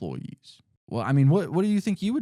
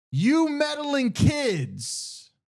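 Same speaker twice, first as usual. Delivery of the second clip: very high, yelled-out cartoon-villain shout; 14 semitones higher than usual. Retelling how the arrested bank manager yells while taken away: imitating someone yelling. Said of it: "he yells out".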